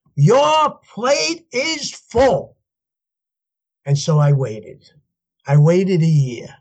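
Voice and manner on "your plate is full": mock, very high, slow, drawn-out screaming. Retelling a man screaming over the phone during an argument, imitating someone screaming. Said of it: "he started screaming over the phone".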